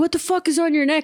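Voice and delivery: put-on angry outburst. Retelling how someone reacted to a neck lick: imitating a pissed-off outburst. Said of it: "pissed off and being like".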